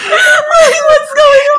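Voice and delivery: freaking out, high, loud, slow laughing squeal.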